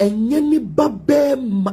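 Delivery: ne ba bɛɛma stressed, slow and high.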